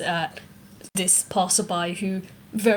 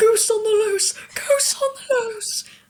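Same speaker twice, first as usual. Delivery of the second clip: very high, shrill, panicked scream; 14 semitones higher, 4 dB louder than usual. Game master voices a person running away from a loose goose, screaming. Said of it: "This person running away is just screaming".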